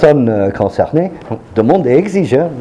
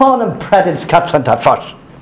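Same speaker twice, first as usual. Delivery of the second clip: put-on heavy, thick Eastern European accent, pitched up; 4 semitones higher than usual.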